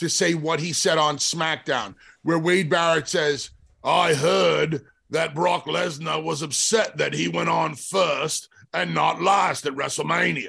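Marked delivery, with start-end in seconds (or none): 3.8-10.5 rough, creaky commentator voice. Retell what Wade Barrett said on SmackDown, doing your best Wade Barrett impression. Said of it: "That's my best Wade Barrett right now".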